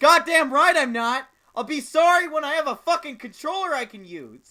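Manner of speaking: furious, shrill, very loud, high yelling. Answering the other speaker's doubt about an apology: angry yelling. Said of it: "until you stop yelling".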